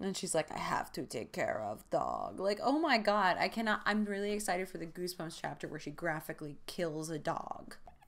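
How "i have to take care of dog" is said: bad Russian accent, very low, slow, drawn out. Recapping a Goosebumps chapter, the speaker quotes Catherine in a bad Russian accent. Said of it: "My Russian accent is bad".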